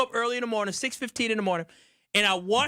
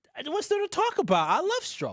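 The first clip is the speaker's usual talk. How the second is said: high voice with swooping pitch; 8 semitones higher than usual. Told by co-hosts to talk it out on air, answering in a high voice. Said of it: "there's the high voice".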